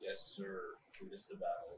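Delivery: whispered, very soft, breathy, dripping sarcasm. Answering a party leader's call to fight in character: very sarcastic tone. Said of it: "I say very sarcastic tone".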